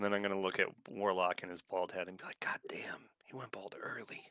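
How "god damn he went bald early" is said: slow, whispered mutter under the breath. Acting out an aside the speaker plans to make, muttered under breath. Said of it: "Under my breath".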